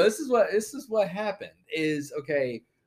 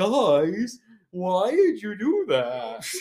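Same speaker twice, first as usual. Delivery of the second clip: dazed, dopey cartoon drawl, guys stretched out; 3 semitones higher, 4 dB louder than usual. Retelling a friend's complaint to the group, Baloo-like dopey voice. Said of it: "That sounded like a Baloo from the Jungle Book on like some sort of drug".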